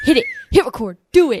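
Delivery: very loud, high, straight-up yelling. Retelling how someone yelled at the start of recording: imitating Randy yelling. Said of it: "yelling at me".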